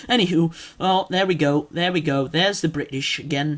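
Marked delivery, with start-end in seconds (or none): none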